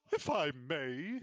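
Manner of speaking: bookish, nerdy orc voice. Narrating an orc who speaks up to her: nerdy orc voice. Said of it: "love that voice for an orc".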